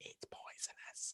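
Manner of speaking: very quiet, breathy, barely audible whisper. Retelling what a woman said as she looked at you, whispering. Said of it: "and she whispers".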